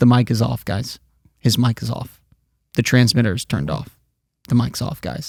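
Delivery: the calmest possible voice, very soft and reassuring. Retelling what they told the guys, the speaker acts out speaking very calmly. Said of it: "I intentionally like speak in the calmest voice possible".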